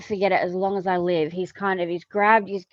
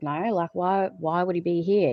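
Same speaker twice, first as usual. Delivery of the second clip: snide, cheeky, smart-ass sarcastic tone. Retelling an answer to visitors looking for him: imitating own smart-ass reply. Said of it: "I was being a total smart ass".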